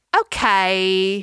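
sassy, funny put-on toddler voice.

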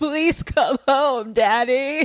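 put-on frightened little girl sobbing, high, tearful. Retelling a movie scene where a daughter phones her father: imitating a crying, scared girl. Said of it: "she's crying and she's scared".

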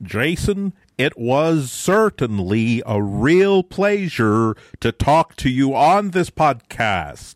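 put-on American accent. Thanking Jason at the end of the podcast, as an English actor faking an American accent. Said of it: "me doing an English BBC actor trying to do an American accent".

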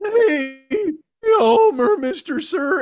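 squeaky, very slow voice, hey stretched long. Telling a buddy about a young hockey player, speaker mimics The Simpsons squeaky voice guy. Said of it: "the fucking squeaky voice guy from The Simpsons".

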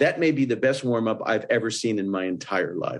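ordinary talk

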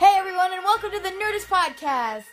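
voice pitched way up. Opening the podcast, welcoming listeners in a much higher voice. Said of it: "my voice got a lot higher".

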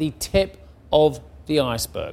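normal talking voice

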